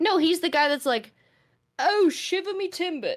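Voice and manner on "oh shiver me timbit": high, drawn-out put-on super British accent. Imitating a guy seen on Instagram Reels: super British accent. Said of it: "super British accent".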